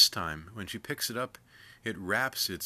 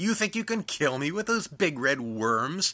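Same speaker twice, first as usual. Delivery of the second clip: high, loud, mocking cackle; 8 semitones higher, 6 dB louder than usual. Facing the shaman and his son with their spears, the old woman speaks, cackling. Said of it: "she cackles".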